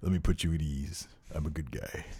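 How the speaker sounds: very deep, quiet, hushed, looming and intimidating voice. Imagining being interviewed by Triple H: imitating Triple H. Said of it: "could you imagine being interviewed by Triple H?".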